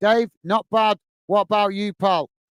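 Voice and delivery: ordinary talk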